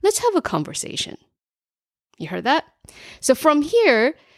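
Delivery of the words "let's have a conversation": pitch falls at the end of "conversation". Turning a question into a statement, falling inflection on conversation. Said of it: "end the sentence in a downward inflection, which denotes authority".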